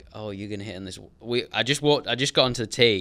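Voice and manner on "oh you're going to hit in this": put-on muttering under the breath, jabbing. Retelling a heckler's jab on the tee: imitating someone muttering under his breath. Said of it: "under his breath".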